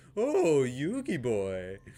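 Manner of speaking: flamboyant put-on cartoon villain voice. Giving an example of an outlandish real-life talker: Pegasus voice. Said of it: "Like Pegasus from Yu-, Yu-Gi-Oh!".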